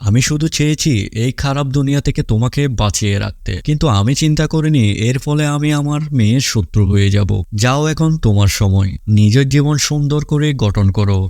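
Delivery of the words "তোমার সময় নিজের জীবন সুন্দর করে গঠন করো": ordinary delivery, nothing marked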